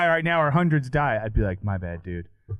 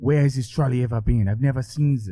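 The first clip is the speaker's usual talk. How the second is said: failed, bad put-on French accent; 2 semitones higher than usual. Retelling what a philosopher said at an event: bad French accent. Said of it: "I can't do a French accent".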